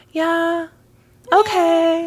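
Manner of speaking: super high-pitched, drawn-out okay. Imitating a woman's annoying voice, imitating a very high-pitched voice. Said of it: "In a super high-pitched voice".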